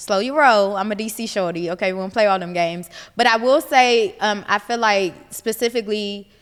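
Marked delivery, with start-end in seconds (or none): none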